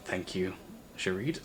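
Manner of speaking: very hushed, soft, barely audible whisper. While writing, the character whispers thanks back to the player's character. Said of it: "he whispers back as he's writing".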